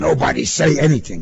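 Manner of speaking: firm commanding tone. Pruskin, stopped by a policeman in his car, gives an order, commanding. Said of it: "Pruskin commanded, his heart racing".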